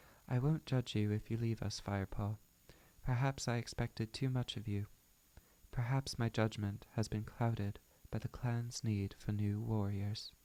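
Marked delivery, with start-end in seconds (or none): none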